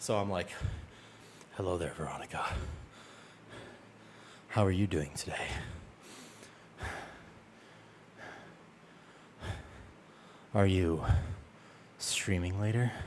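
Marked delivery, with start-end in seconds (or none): 1.6-12.9 hushed, soft, breathy ASMR-style whisper. Showing how they talk right after doing burpees; accidental asmr voice. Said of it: "I accidentally do A S M R".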